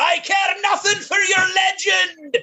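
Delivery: very high, shrill, shrieking scream. A player's character underwater screams at a creature nobody understands; screaming. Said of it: "but I'm screaming".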